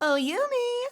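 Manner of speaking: put-on very high, sassy girl voice with a drawl. A voice actor demonstrates a line from a role, in a sassy character voice. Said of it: "I occasionally have to do these little sassy".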